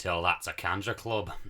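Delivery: put-on Scottish accent. Speaker quotes the only Scottish line he knows, from Episode Seven: Star Wars Scottish accent. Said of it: "The only Scottish I know was a line".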